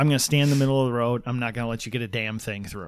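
plain

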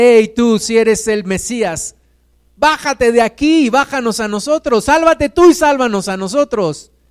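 high, jeering, mocking shout. Speaker retells how a condemned criminal taunted Jesus; acting out a mocking shout. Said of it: "lo hacía burlándose del maestro".

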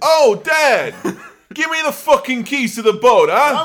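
put-on very high, very loud, shrill New York child accent. Mocking the kids from the film with their New York accent. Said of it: "losing the accent, but his kids have definitely got this kind of".

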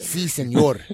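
put-on Mexican Spanish accent. Answering a laughing question with a put-on mexican accent. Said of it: "Is that how you think he's supposed to sound?".

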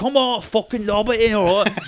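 put-on amateur Scottish accent. Retelling what a man said in a story, in a put-on Scottish accent. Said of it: "Is that your Scottish?".

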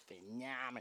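"phenomenal" pronounced in a Boston accent. Showing how the word is said in Boston: Boston accent. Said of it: "That's how you would say it in Boston".

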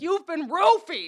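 mock, loud, insistent shouting. Retelling how a woman on the roadside shouted at them: imitating a woman screaming. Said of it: "screaming it at us on the side of the road".

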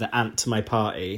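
ordinary talk, nothing marked

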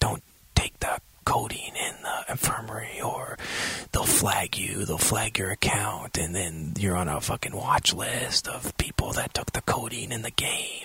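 whispering. Talking about the game, whispering. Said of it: "that's why I'm whispering".

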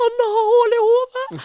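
high, slow words squeezed through laughter. Retelling a hotel story, the speaker quotes her phoning mom, imitating talking through laughter. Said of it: "prøver å si mens hun ler sånn".

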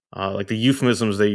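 ordinary talk, nothing marked

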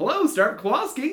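high-pitched, super enthusiastic dad voice.

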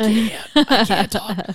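barely-there lost voice, very high and very slow. Recalling kids who thought they were pranking, imitating having no voice. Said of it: "I had no voice at all".

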